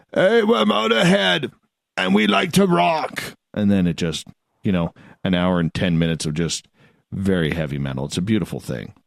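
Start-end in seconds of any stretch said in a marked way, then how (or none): 0.2-3.2 put-on scraggly rocker voice. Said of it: "Lemmy comes on in that scraggly voice".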